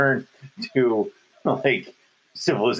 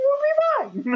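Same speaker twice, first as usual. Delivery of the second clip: voice rising higher and higher in pitch. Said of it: "His voice is getting higher and higher".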